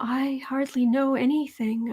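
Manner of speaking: soft, frail, super fake breathy voice. Mocking how a woman talks to people, super fake breathy voice. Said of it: "in her super fake, breathy voice".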